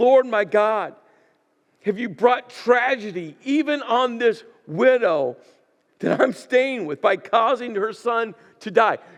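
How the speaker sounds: loud, high, aggressive, demanding cry. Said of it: "You can't get more aggressive than that".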